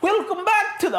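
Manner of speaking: very high-pitched put-on Scottish accent. Podcast host restarting the show intro, attempting Ali's Scottish accent. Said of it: "that's kind of like fucking Irish".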